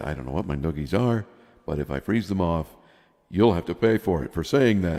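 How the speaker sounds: plain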